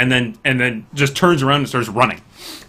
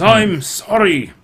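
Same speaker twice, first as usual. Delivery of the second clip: dwarf voice, pitched higher; 7 semitones higher than usual. Voicing a dwarf apologizing to travellers: dwarf voice. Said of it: "And he says".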